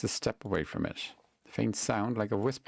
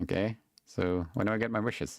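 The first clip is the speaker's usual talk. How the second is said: normal talking voice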